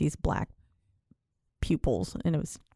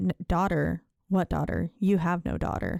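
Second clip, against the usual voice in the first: ordinary delivery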